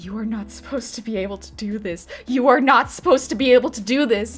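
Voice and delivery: mock frantic, freaking-out outburst. Retelling how the DM reacted to a natural twenty: imitating someone freaking out. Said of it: "our D M is meanwhile freaking out".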